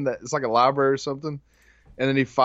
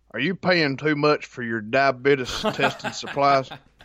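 put-on elderly commercial pitchman voice. Doing a diabetes-supplies commercial line on request: Wilford Brimley voice. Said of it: "You could be Wilford Brimley for sure".

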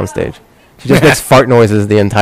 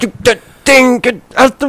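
mock fumbling, frustrated, angry ranting voice, higher; 13 semitones higher than usual. Retelling how a frustrated dad fumbled for words: imitating a frustrated angry dad. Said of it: "he was so frustrated at me".

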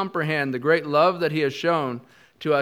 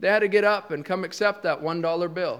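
plain

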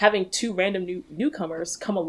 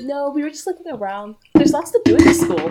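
loud, high-pitched ditzy voice; 8 semitones higher, 10 dB louder than usual. Recapping a movie scene she disliked, imitating Gabriella's ditzy voice. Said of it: "she sounds so ditzy".

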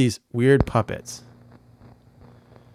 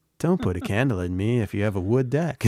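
plain

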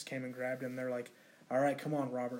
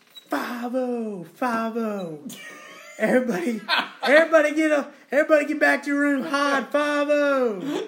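put-on yell, higher and louder; 12 semitones higher, 14 dB louder than usual. Retelling how a patient in the hallway started yelling: imitating someone yelling. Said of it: "I heard somebody start yelling".

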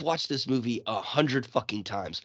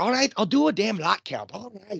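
put-on high voice slipping into a slight Scottish accent. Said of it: "I wend a little Scottish there".

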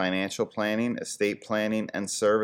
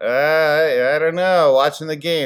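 very loud, high, cagey, awkward evasive stammer; 7 semitones higher, 9 dB louder than usual. Imitating a sports talk radio host who gets invited out: imitating a cagey, weird host. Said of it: "gets all cagey and weird".

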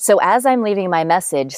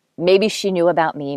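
plain

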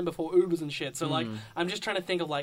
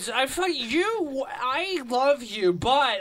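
put-on play-acted, very slow, slurred drunken speech; 7 semitones higher, 5 dB louder than usual. Retelling what they said to her while drunk, the speaker is imitating drunk slurring. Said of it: "I'm drunk, so I'm slurring".

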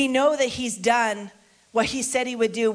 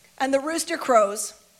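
ordinary talk, nothing marked

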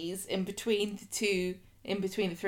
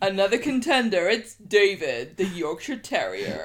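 wrestling ring announcer voice; 6 dB louder than usual. Asked to do it anyway, speaker announces another contender, wrestling announcer voice. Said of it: "in your best wrestling announcer's voice".

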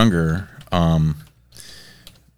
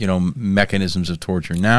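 plain

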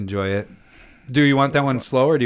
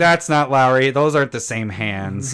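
ordinary talk

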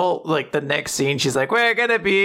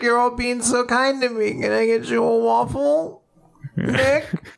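put-on sweet old man voice; 4 semitones higher than usual. Retelling what an old man said to those helping him, imitating a sweet old man. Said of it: "He's such a sweet little old man".

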